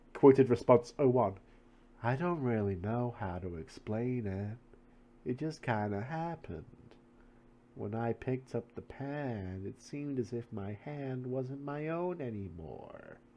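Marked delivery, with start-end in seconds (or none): 2.0-13.1 slow, quieter speech. Reading aloud a quoted interview response about a pen: talking slowly. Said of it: "Why does she talk so slow?".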